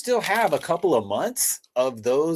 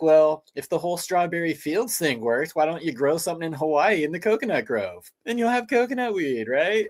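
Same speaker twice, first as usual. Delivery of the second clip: mocking, sarcastic tone; 3 semitones higher than usual. Retelling what was thought while the other spoke: acting out own sarcastic remark. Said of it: "I'm sitting here being sarcastic".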